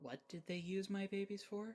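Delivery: hushed, quiet voice. Voicing a character whose brow is furrowed: quietly spoken. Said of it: "quietly says".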